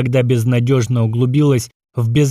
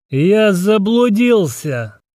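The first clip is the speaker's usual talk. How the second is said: put-on completely sloshed-sounding drunken voice, pitched up; 8 semitones higher than usual. The narrator answers a gnome's rough question in a drunk voice. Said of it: "совершенно пьяным голосом отозвался я".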